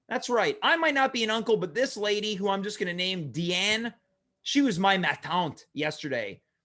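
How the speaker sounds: ordinary talk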